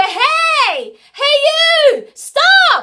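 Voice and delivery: very high, very loud, slow calling-out shout. Showing learners the feeling of a call: calling out to someone. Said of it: "when you call out to someone".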